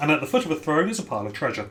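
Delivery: normal talking voice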